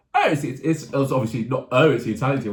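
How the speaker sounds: ordinary talk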